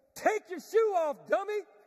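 high, very loud shouted yell. Telling a story of running with a burning shoe, retelling a yell. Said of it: "she yells".

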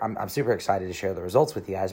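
ordinary talk

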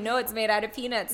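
plain

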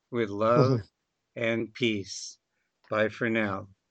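choked-up voice catching with emotion. Closing a show after thanking a guest; choked up. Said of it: "I'm kind of choked up here".

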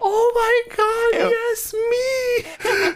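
girlish put-on voice, pitched very high. Retelling how Nia reacted sitting in her seat, imitating Nia. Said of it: "This girl voice".

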